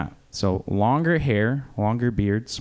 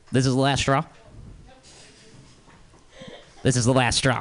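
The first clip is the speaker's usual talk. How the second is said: exasperated, fed-up voice at the end of patience; 4 semitones higher than usual. Doing an impression of a general manager about to fire a shift manager. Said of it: "This is an impression of a general manager who is about to fire a shift manager".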